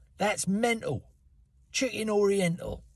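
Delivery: London Cockney voice. Listing how different places say it, in a cockney london accent. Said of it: "In fucking Cockney London, they might say".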